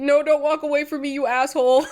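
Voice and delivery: mock sobbing, high, loud, tearful pleading tone. Speaker acts out the listener crying as Bustelo walks away, imitating someone crying. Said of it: "you start crying again".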